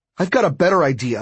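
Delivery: ordinary delivery, nothing marked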